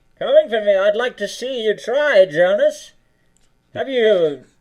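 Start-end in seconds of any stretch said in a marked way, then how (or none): 0.2-2.9 put-on transatlantic villain accent. In a role-played scene, the villain answers a challenger named Jonas, transatlantic accent. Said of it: "I half hear that like New Atlantic accident".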